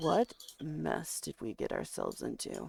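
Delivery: quiet, soft grumbling under the breath. In a game session, a player voices Kin grumbling softly to a companion. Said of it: "Kin just kind of grumbles softly".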